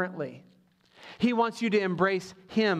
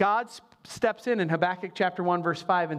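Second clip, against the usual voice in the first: ordinary delivery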